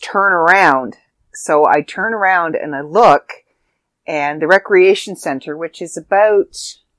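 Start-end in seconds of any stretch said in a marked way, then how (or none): 0.0-1.0 put-on scream kept small, mild yell. Retelling what a neighbor screamed at them outside, retelling a neighbor's scream. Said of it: "And he screams".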